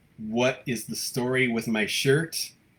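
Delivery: ordinary delivery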